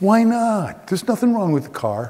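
high, aggrieved, wounded, hurt-sounding voice. Retelling a father told the car fails inspection: imitating a hurt father. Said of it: "My father's hurt".

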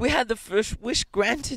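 feverish, urgent, very high-pitched voice. An old woman answers her husband, speaking feverishly. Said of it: "said the old woman feverishly".

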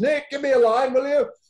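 full-voiced, very high, very loud, shrill shout. Retelling how he asked for a line with conviction, retelling a very loud shout. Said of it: "I shouted in a very loud voice".

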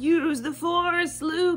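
terrible, high, slow, very drawn-out movie-style voice. Speaker explaining the word force, quoting the films: bad Star Wars impression. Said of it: "That was a terrible impression".

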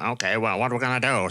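put-on confident, self-assured, unbothered American accent. Discussing a film, imitating Ian McCulloch's confident tone: Ian McCulloch impression in American accent. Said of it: "I'm doing an American accent 'cause I can't really do Ian McCulloch's voice".

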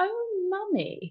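high-pitched, heavy, pointed sarcasm. Telling how a famous actress teased her, imitating Judi Dench saying it sarcastically. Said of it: "with such sarcasm in her face and went".

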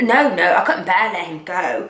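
slow, put-on fake British accent. Retelling what a woman answered Spencer: put-on British accent. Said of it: "she was in a British accent".

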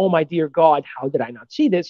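ordinary talk

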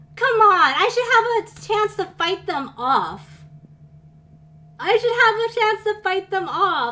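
angry, exasperated tone. A player just killed in a game, protesting that it was unfair: mad, frustrated. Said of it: "I'm so mad".

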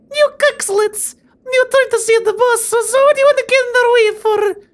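Russian woman's accent. Unable to recall a friend's voice, doing a female Russian accent instead. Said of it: "Maybe I could do like a Russian accent".

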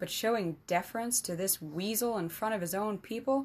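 plain

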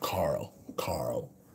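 breathy, purring voice, soft, under the breath. Showing again how the actor says the name: Rick Grimes purring voice. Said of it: "Sounds like a cat purring".

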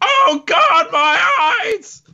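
very high, very slow, drawn-out pained wail. Casting an illusion of a paladin crying out: paladin screaming in pain. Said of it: "the sound of a paladin screaming".

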